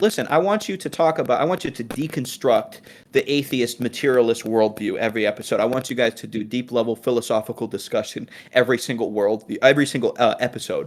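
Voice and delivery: ordinary talk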